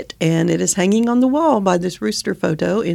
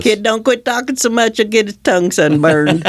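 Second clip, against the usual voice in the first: old-style cartoon voice; 2 semitones higher than usual. Trading classic Foghorn sayings with another speaker, Foghorn Leghorn voice. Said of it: "who did the Foghorn's voice".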